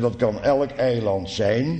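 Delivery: stress on elk, drawn out with a rise.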